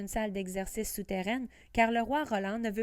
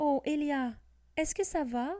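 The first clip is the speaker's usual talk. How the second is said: shaky, trembling voice, higher pitch; 5 semitones higher than usual. Reading a story, a girl asks her hurt dragon if it's okay: trembling voice. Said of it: "d'une voix tremblante".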